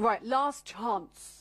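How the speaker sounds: put-on London English accent. Announcing a last chance, London accent. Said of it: "So that's my best English accent".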